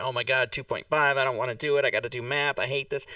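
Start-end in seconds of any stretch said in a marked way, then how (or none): none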